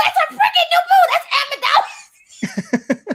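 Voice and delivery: very high, swooping, thrilled shriek. Retelling a reaction to a TV episode, imitating own past yelling. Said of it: "I was yelling".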